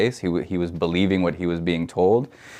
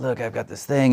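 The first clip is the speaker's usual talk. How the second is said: put-on raspy voice, low in the throat; 5 semitones higher than usual. Retelling how the director phoned about a project: imitating a raspy voice. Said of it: "She's got this great raspy voice".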